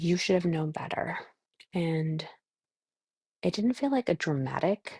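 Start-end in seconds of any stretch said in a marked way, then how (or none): none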